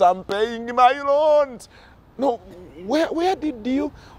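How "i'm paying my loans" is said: acted mock shout, much higher. Speaker acts out someone shouting back when asked about the money: retelling a shout. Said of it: "you shout back to the top of your voice".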